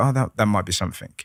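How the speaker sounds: ordinary talk, nothing marked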